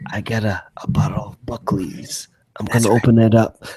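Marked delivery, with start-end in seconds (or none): 0.1-2.3 soft, hushed ASMR-style whisper close to the mic. Joking about whispering YouTube videos: mock ASMR whisper. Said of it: "the whispering YouTube is like".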